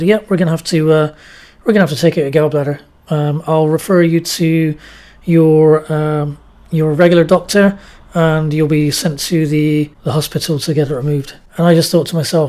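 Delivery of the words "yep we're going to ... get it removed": ordinary talk, nothing marked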